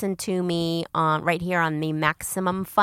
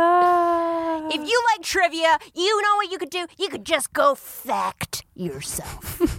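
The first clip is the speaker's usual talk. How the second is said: jokey, playfully aggressive tough-guy voice, pitched very high; 10 semitones higher than usual. Saying the pun in a trivia show's title the way the speaker likes, mock-aggressive. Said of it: "I just like saying it aggressively".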